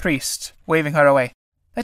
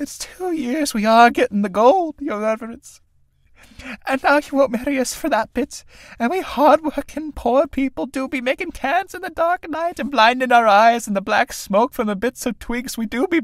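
high, wheedling, tearful sobbing plea; 9 semitones higher than usual. A young tinker woman tells the holy man he won't marry them, Sarah Casey sobbing. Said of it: "Synge, a story of two young tinkers trying to con a travelling holy man into marrying them, all while their mother is constantly trying to satiate her indomitable thirst for drink, thereby inadvertently causing more prob".

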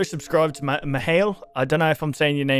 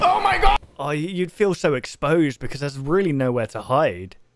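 usual speaking voice

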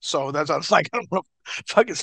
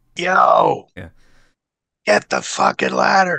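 loud, slow, swooping, long carrying shout; 3 semitones higher, 7 dB louder than usual. Naming the loudest spot caller and imitating him: imitating Sam's loud shout. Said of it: "I'd hear him a mile away".

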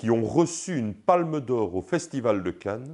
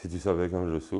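low mumble, lips hardly moving, barely articulated; 6 semitones lower, 6 dB quieter than usual. Being coached to say it lower without moving the lips, quiet mumble, lips barely moving. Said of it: "Plus bas. ... n'articule pas autant ... bouge pas les lèvres".

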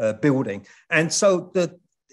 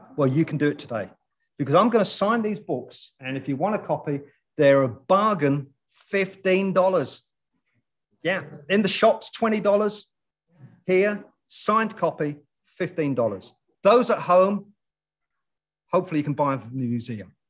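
hard-sell tv commercial sales pitch voice; 3 semitones higher than usual. An author, asked to do a commercial for their book, performs it: TV commercial sales pitch. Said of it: "Why don't you do a commercial for your book?".

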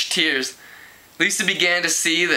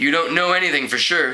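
plain

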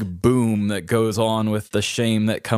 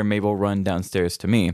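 usual speaking voice

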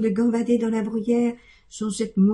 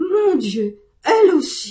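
stunned, high, drawn-out astonished cry; 7 semitones higher, 6 dB louder than usual. A man hears his goat ask to leave for the mountain; cried out in astonishment. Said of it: "cria monsieur Seguin stupéfait".

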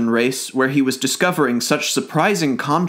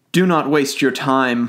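plain

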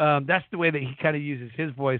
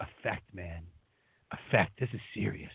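mock dramatic preacher delivery, lower and quieter; 7 semitones lower, 9 dB quieter than usual. Retelling what the preacher answered about his delivery: imitating a dramatic preacher. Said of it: "super dramatic for a second".

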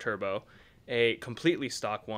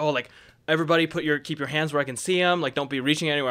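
super aggressive, pitched-up, authoritative delivery; 5 semitones higher, 6 dB louder than usual. Retelling being pulled over, imitating an aggressive cop. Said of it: "he came up super aggressive".

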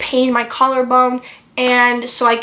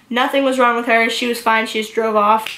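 plain

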